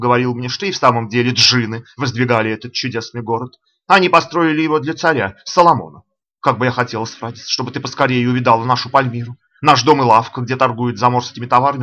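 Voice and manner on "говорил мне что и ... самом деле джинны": usual speaking voice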